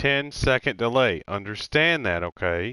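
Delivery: slow, loud, pointed inflection leaning on it.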